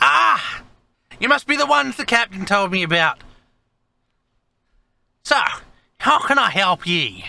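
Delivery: put-on very high grey-bearded old man voice. Narrating a scene, the speaker voices an old man greeting visitors in an old man voice. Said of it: "you find a grey bearded old man".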